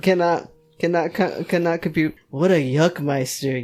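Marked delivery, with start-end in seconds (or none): 2.3-3.6 muttering sarcastically. Reading a horror book aloud, the hero's reply: sarcastic mutter. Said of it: "you mutterly sarcastically".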